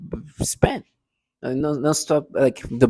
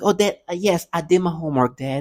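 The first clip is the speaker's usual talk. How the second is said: put-on childlike, insistent tone, like a kid; 3 semitones higher than usual. Mimicking how they sound when they talk: imitating a childlike tone. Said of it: "they use this tone of, like, like a child".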